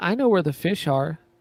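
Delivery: put-on small, tiny, high childlike voice. Retelling his line by an underwater jetty, in a small childlike voice. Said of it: "in his little voice".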